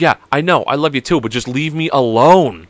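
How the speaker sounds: put-on mad, fed-up, annoyed four-year-old voice. Retelling a four-year-old's reply to being jumped on: imitating an annoyed four-year-old. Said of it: "she said it just like that, a four-year-old completely just getting mad".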